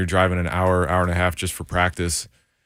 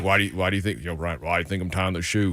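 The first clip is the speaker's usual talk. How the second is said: imitated deep Southern voice; 4 dB quieter than usual. Retelling what the kicker said before the kick, imitating a deep Southern voice. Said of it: "Southern deep voice".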